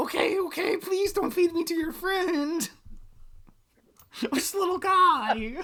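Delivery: very high, begging, pleading little goblin voice. Voicing a captured goblin begging not to be fed to an orc: panicked pleading goblin. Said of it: "It's a level one goblin!".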